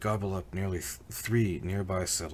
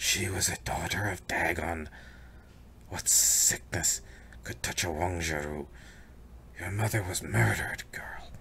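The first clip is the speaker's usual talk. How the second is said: words hissed through the teeth in a creature voice. Narrator reads the net-wearing creature lunging forward at the girl, hissing.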